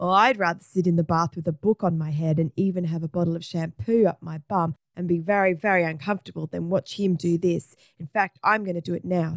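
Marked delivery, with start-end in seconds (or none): none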